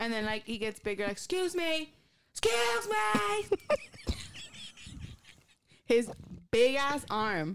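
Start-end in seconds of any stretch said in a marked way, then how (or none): 1.1-3.6 acted scream, very high, slow and drawn out. Retelling how Alec got heated at a restaurant, retelling Alec's scream. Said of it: "What are you screaming?".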